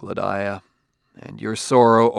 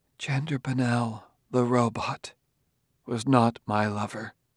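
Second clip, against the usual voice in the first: soft, hushed stage whisper; 6 dB quieter than usual. A woman answers a man's harsh question, half-whispered. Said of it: "And Gladiah whispered".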